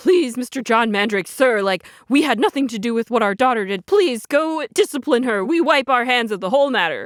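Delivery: put-on, slow, frightened, groveling, terrified pleading tone. Retelling how terrified parents begged an official: imitating terrified pleading parents. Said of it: "They're, like, terrified".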